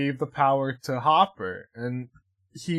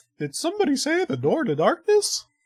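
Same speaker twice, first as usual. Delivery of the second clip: very high, swooping, sing-song half-cartoon voice; 13 semitones higher than usual. Quoting Kingdom Hearts about the door to darkness: semi-Mickey voice. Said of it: "the only thing I can say in a semi-Mickey voice".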